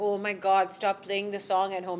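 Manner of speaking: ordinary talk, nothing marked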